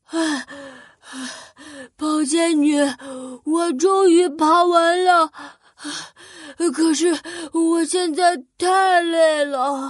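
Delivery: gasping, panting, out-of-breath complaining tone. Narrator reads the thin demon's words after his climb, out of breath and panting. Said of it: "瘦妖怪累得气喘吁吁的".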